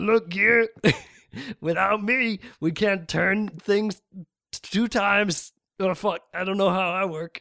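loud, high put-on drunken ramble, tripping on words. Speaking to Gear in character, acting drunk. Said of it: "He's drunk".

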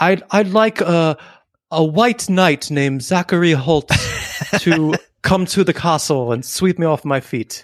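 put-on South African accent. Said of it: "I think we sound more South African now".

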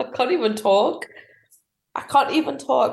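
talking through helpless laughter. Reacting to a government announcement on modern slavery, laughing while talking. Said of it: "I'm laughing because of how ludicrous this is".

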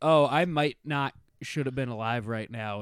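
ordinary delivery

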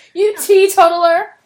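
very loud, shrill, insulting yell. Trying out a newly learned word as an insult on a co-host: yelling. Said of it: "Why are you yelling at me?".

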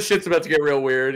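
ordinary talk, nothing marked

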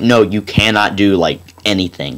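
ordinary talk

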